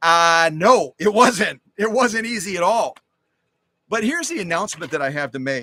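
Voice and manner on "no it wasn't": slow, firm, insistent, weighted, emphatic delivery. Imagining the judges' answer about choosing the winners, in a loud, emphatic voice. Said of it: "in a very loud, emphatic voice".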